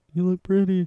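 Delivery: mumbled remark to himself. Retelling a scene, quoting a line said out of earshot: imitating muttering under breath. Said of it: "under his breath".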